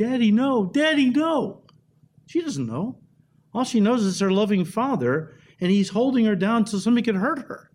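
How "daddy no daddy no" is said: put-on acted, very slow, high, drawn-out child's scream. Retelling a girl held down for surgery: imitating a screaming child. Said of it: "she's screaming, and she's screaming".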